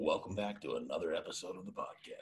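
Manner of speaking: low, scary, weird radio-host voice. Trying out the podcast intro after the other host, in a scary weird DJ voice. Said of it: "that's your scary, weird DJ voice".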